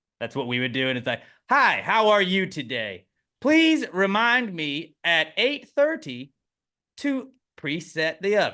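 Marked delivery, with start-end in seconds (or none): 1.5-8.5 loud, slow, exaggerated tune. Imitating an old person giving their phone a reminder, imitating an old person talking loudly to a phone. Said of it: "very loudly and like they would a person".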